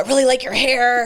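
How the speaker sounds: mean, nasty-sounding voice.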